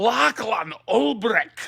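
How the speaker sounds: put-on Scottish accent, belted very loud and high. Saying a man's name for fun, in a scottish accent. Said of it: "It's just fun to say in a Scottish accent".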